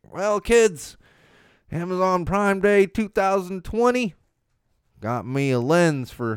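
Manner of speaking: high-pitched, slow Southern accent.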